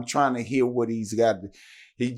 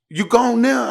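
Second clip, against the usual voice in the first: mock panicked, very high-pitched, raised motherly voice; 12 semitones higher, 8 dB louder than usual. Retelling his mom's phone call to a listener, imitating a frantic mother. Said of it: "I could hear the frantic in her voice".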